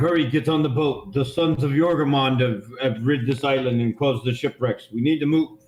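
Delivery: ordinary delivery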